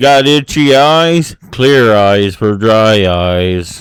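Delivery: dead-flat, very slow monotone impression. Imitating how the Clear Eyes ad guy talks: Ben Stein monotone impression. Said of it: "Ben Stein?".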